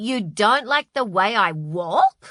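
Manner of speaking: sputtering out the words. Narrator reads a character's retort on being told their walk is disliked: spluttering. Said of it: "Spluttered Carmel".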